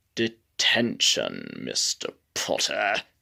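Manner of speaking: oily, slick, breathy whisper. Showing how Snape sounds when reading the books aloud: oily Snape voice. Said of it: "but my Snape is more like".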